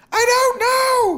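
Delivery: shrill, high, loud yelled words. Reading a story, a woman answers his question over a banshee's wail, shouted. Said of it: "she shouted".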